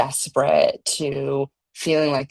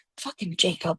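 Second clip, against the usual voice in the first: put-on muttering under breath, higher and quieter; 3 semitones higher, 5 dB quieter than usual. Retelling a reaction while watching in bed late at night: imitating muttering under breath. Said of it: "under my breath".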